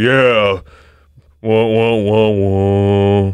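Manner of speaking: very slow, drawn-out, deep baritone drone. Mocking the other two speakers' deeper voices: imitating a baritone voice. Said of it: "the baritone you've got going on".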